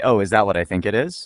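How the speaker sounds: ordinary delivery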